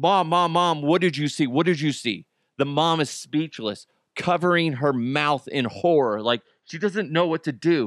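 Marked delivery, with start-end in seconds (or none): 0.0-2.2 put-on hysterical voice. Retelling a story, the speaker voices a daughter questioning her mom, imitating someone in hysterics. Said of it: "Misty is just in hysterics".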